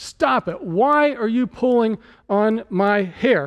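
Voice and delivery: slow, exasperated, annoyed voice. Retelling how a dad reacted to his daughter pulling his hair, mock-annoyed dad. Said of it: "He's getting annoyed".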